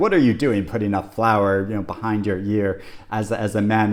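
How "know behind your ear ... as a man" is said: normal talking voice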